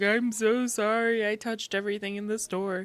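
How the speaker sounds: put-on tearful child's voice, speaking through tears. Retelling a sick child's apology for touching everything: imitating a crying child. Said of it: "he just comes over crying to me".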